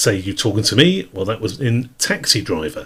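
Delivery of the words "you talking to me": ordinary delivery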